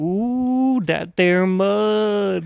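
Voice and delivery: bad put-on Cajun accent, mud drawn out. Mimicking a movie actor's Cajun accent while discussing it, bad Cajun accent imitation. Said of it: "walking around my apartment going".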